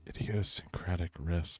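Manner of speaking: soft, quiet voice. Talking to viewers close to the mic, trying a softer quiet voice. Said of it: "A little bit softer".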